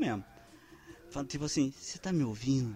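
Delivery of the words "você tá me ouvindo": barely audible, very soft, hushed speaking. Showing a trick on a telemarketing caller: very quiet voice. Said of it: "você fala bem baixinho".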